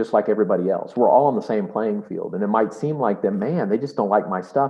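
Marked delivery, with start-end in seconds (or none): none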